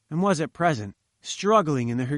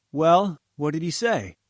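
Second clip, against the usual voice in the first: ordinary delivery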